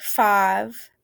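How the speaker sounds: drawn-out southern open "ah" vowel in "five". Recalling kids counting by fives, southern 'ah' in five. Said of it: "some of the kids had a kind of a southern accent. And when they say that long I and five, it's like ah".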